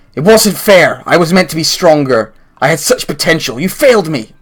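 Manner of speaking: half-called out, accusing tone. Narrating a room of Maw demons, Talia shouts toward the players: Talia shouting. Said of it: "Talia shouts in your direction".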